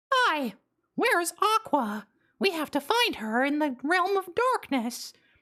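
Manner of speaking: high squeak without excitement. Demonstrating how Mickey sounds from Birth by Sleep onward, in a flat Mickey Mouse voice. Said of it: "they just sound like this the rest of the time".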